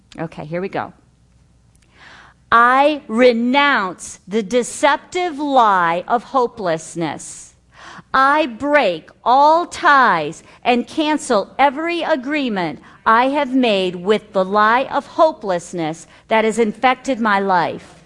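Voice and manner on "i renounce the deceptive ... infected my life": fervent, slow, earnest, every word meant. Reading a renunciation aloud for listeners to repeat, fervently and slowly. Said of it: "I'm going to read it fervently, like I mean it. And I'm going to read it slowly".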